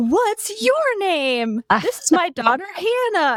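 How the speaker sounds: very cheery, chatty, bright sing-song put-on voice. Recalling meeting a girl in line, the speaker quotes her mom: imitating mom's very cheery voice. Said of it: "in her like very che- cheery voice was like".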